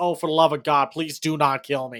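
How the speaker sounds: usual speaking voice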